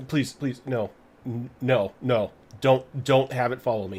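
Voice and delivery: trembling, frightened pleading tone. Game master voicing a threatened character begging the player; trembling, frightened pleading. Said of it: "physically begins to tremble".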